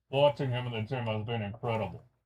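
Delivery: distorted, electronically disguised voice-changer voice. Quoting an anonymous executive's words, voice-changer distorted voice. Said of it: "it's like a voice changer. ... it'd be like this".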